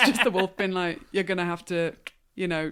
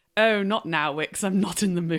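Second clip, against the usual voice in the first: put-on voice of an annoyed, ticked-off man. Quoting a colonial man from a scene: imitating a ticked-off man. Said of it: "this guy being ticked off".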